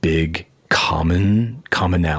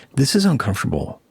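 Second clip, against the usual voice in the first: one variant reading, pitched up; 6 semitones higher than usual. Showing the ways the podcast name can be said: one way of saying it. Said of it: "You can be like".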